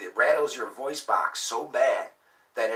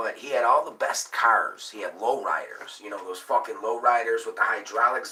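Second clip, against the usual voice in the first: normal talking voice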